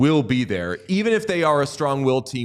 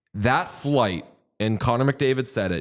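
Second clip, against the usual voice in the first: usual speaking voice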